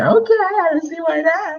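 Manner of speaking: put-on very high, squeaky, sing-song, swooping girly voice. Retelling a story about friends making plans, the speaker imitates Amber in a girl voice. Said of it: "Do you like this girl voice that I'm doing".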